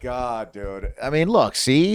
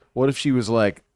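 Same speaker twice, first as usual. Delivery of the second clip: ordinary delivery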